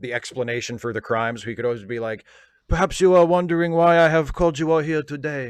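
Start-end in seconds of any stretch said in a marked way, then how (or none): 2.7-5.5 loud, grand, proclaiming delivery in a Belgian accent. Imitating Poirot opening a wrestling promo: Poirot voice. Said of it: "promos in that Belgian accent".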